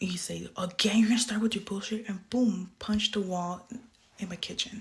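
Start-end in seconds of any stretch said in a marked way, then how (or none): 0.6-2.1 screaming, louder. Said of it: "He proceeded to scream at me".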